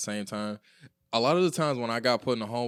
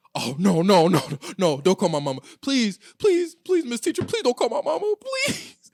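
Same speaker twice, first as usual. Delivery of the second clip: put-on very high, loud, pleading kid's voice; 11 semitones higher, 6 dB louder than usual. Retelling how he begged a teacher not to call home: imitating himself begging. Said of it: "begging her".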